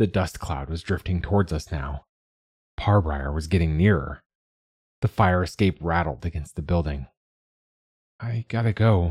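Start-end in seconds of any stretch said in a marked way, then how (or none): 8.2-9.1 words croaked out. Speaking to Dad just before he suddenly catches you up in his arms, croaked. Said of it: "It came out of the croak".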